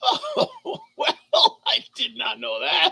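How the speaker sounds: very high, very slow giggling speech. Reacting to a surprising fact, laughing while talking. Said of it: "I shouldn't be laughing".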